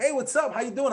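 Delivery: enthusiastic. Speaker demonstrates greeting a CEO met in a college hallway, excited. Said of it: "I'm gonna be excited".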